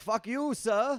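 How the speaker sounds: put-on prim, overly polite English accent, very high. Retelling how an English guy in Times Square cursed the speaker out, mock-polite English accent. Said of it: "he was English".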